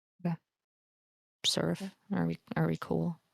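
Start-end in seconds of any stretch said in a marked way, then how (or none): 1.5-3.2 low, indistinct mumbling. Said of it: "she'll kind of mumble".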